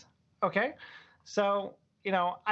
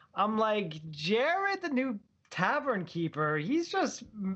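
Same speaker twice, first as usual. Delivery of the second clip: ordinary delivery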